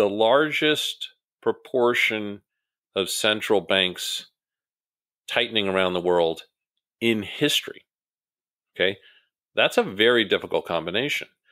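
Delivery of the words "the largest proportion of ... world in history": deliberate, very slow, halting, broken into pieces. Walking an audience through weak global indicators, speaking slowly. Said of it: "I just want to say this slowly".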